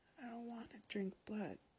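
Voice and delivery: feeble, weak, hushed, high voice with little strength. Nodding against their own will, the narrator speaks up in a weak voice. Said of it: "my voice sounded weaker than ever".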